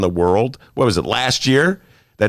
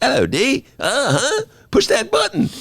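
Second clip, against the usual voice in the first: very high, sing-song British accent swooping way up. Greeting a co-host as a joke: Fleabag imitation. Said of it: "And they all talk like this".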